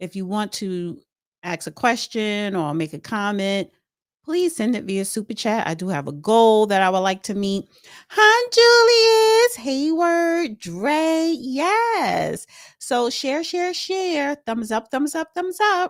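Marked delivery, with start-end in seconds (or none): 8.1-15.9 high, slow delivery with yes stretched out. Asking viewers to share and like, doing a Vicky Diller impression. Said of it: "That's my Vicky Diller impression".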